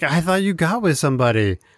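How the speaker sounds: irate, fed-up, very pissed-off, accusing tone. Retelling a scene where Michael is angry at Dwight: imitating Michael, super pissed off. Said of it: "super pissed off at Dwight".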